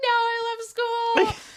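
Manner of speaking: very high, drawn-out tearful wail. Retelling own childhood protest at being taken out of school: imitating past crying. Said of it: "would cry".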